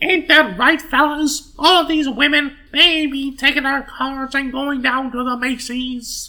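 squeaky, very high, old-time cartoon man voice. Quoting McKimson, the speaker uses a cartoonish put-on voice. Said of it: "why does Mickey Mouse have an opinion on this?".

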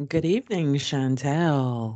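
seductive, sultry put-on voice. Host opening a show on sex and horror, greeting someone: put-on sultry voice. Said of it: "What's this all sultry voice you got going?".

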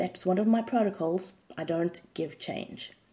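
ordinary talk, nothing marked

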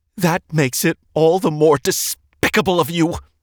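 high, shaking voice, spitting the words. Reading a woman's retort in an argument over Dean: spat, voice shaking. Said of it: "the woman spat".

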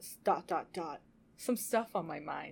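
low, halting, hesitant delivery with dramatic trailing-off pauses.

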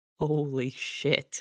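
quiet, hushed, stunned, shocked disbelief. Voicing a character who has just yelled, now softer: softer, quiet shock. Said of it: "and then just softer".

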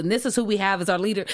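ordinary talk

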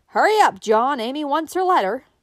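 very loud, high, playfully mischievous call. A wife calls to her husband as he drives into the barnyard. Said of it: "with a mischievous twinkle in her blue eyes, she called".

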